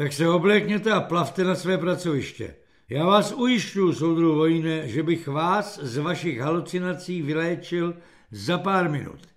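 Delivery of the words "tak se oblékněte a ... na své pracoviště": usual speaking voice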